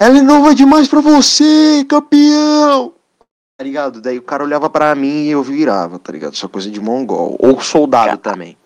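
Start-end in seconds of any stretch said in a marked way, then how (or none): 0.0-2.9 play-acted very high, shrill, loud, drawn-out yell. Retelling how he shouted at passing couples, retelling a shout. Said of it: "Daí eu gritava assim".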